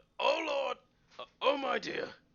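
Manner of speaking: shrill, very high, very loud terrified cry. Game master voicing Doran as a creature emerges from rubble, crying out in fear. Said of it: "he's going to cry out".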